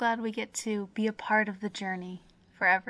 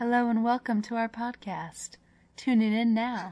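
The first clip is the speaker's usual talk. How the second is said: calm, soothing public-radio host voice. Joking about opening the podcast calmly: NPR radio voice. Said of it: "talking our N P R voices".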